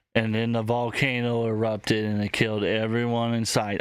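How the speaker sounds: put-on flat deadpan monotone with no inflection. Mocking someone who speaks without inflections, imitating a flat monotone. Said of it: "I hated the deadpan so much".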